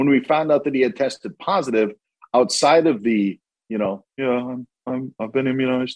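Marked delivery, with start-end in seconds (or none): 4.2-6.0 soft-toned, mild, gentle voice. Imitating a quarterback claiming he was immunized: Aaron Rodgers impression. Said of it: "I'm trying an Aaron Rodgers impression".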